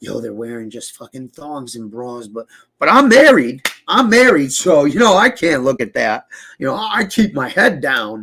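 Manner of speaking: heavy, blatant, over-the-top sarcasm. Retelling what someone said in a clip: imitating over-the-top sarcasm. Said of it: "the sarcasm is just so over the top".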